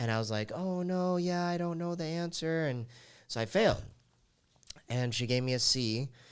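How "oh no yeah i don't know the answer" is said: play-acted, pitched-up, feigned clueless innocence. Retelling pretending not to know answers on a test: imitating playing dumb. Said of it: "pretending to be dumb".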